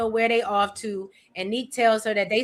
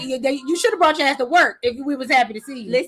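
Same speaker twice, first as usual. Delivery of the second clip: mock stern, reproachful tone; 2 semitones higher than usual. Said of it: "They be like".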